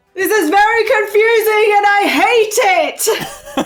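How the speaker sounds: loud yelling. Complaining in character about a confusing situation: yelling. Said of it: "Why are you yelling?".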